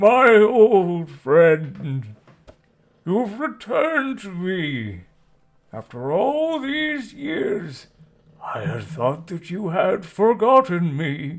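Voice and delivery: loud, high, booming, bellowing whale voice. Narrating a scene to the players, the storyteller voices Ungajuk the whale, bellowing. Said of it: "The whale bellows out".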